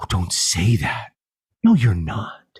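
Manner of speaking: mock wholehearted, earnest, totally sincere tone. Retelling a wife's reply to her husband: imitating a totally sincere reply. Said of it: "totally sincerely said".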